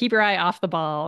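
normal talking voice

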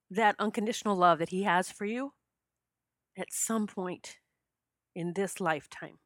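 voice catching with emotion. Telling listeners a story that still moves them, choked up. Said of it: "I get choked up just telling that story".

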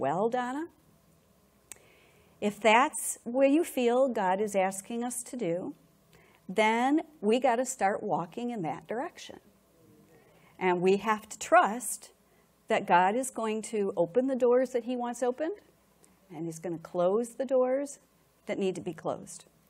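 very calm, soft, even, unhurried voice. Recalling how Brian answered her while she stood shaking; imitating Brian's calm tone. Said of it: "very calmly very calmly he said to me".

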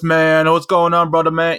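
heavy street slang voice, laid on thick. Telling a story, the speaker imitates how two guys who walked in were talking. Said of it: "They were talking like this".

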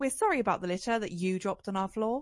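pointed, passive-aggressive announcer voice. Doing their best version of the tannoy announcement, mock passive-aggressive announcer. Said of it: "really like passive aggressive".

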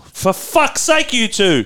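high, slow exasperated yell. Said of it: "Why are you yelling?".

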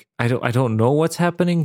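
usual speaking voice

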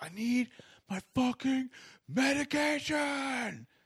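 mock, very high, shrill, drawn-out screaming. Retelling what a man kept screaming about his medication: imitating a man screaming. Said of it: "he's just like screaming how he needs his medication".

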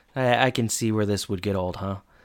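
put-on flat delivery. Quoting one character's reply to another, retelling a deadpan line. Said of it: "Mr. Feeney just deadpans to Jack".

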